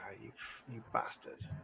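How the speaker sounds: grudging, envious, breathed out under the breath.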